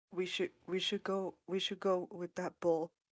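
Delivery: hushed character voice. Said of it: "get up all quietly".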